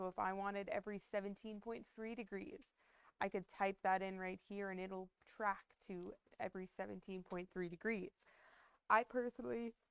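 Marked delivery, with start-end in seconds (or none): 8.9-9.7 talking through a yawn, pitch higher. Explaining how to set tracking angles, the speaker breaks off: yawning. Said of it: "I'm yawning".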